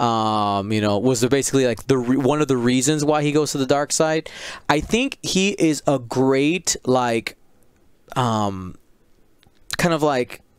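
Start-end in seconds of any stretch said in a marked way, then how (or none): none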